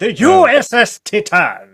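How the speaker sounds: very loud, high, very slow, drawn-out belting. Showing the voice just tried on the ship's name: Matt Berry impression. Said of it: "I was trying to impersonate Matt Berry".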